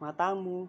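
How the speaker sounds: matamu with the tone pushed up high. Explaining when Javanese words sound rude: matamu in a raised tone. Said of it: "kalau nadanya tinggi".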